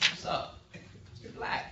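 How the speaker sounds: relaxed, soft, whispered swagger. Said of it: "Just have swagger".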